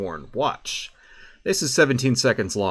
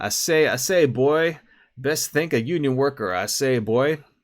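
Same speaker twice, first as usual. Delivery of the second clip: put-on cartoon rooster or chicken voice; 4 semitones higher than usual. Mocking how someone talks to working people, in a Foghorn Leghorn voice. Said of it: "they put on this cartoon chicken voice".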